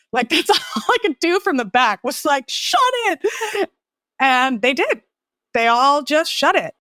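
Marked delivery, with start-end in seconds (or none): 2.4-3.6 put-on very high-pitched, barked delivery. Retelling silencing a talkative taxi driver from the back seat: retelling a barked order. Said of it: "And I barked".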